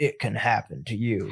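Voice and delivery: slow, deliberate, measured delivery. Quoting a movie's tagline: Keanu Reeves voice. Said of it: "you're saying it like Keanu Reeves?".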